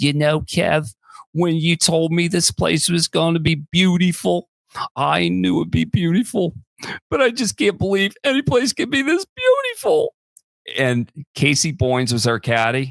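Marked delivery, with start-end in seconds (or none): 0.0-10.1 put-on outstanding, high-pitched Philadelphia accent. Recounting a golf outing to Michael, the speaker quotes Claudia: Claudia's Philadelphia accent. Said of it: "an outstanding Philadelphia accent".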